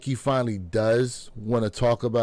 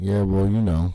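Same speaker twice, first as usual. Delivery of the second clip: mock low-energy monotone, lower and louder; 3 semitones lower, 4 dB louder than usual. Mocking how interviewees answer a question: imitating a monotone interviewee.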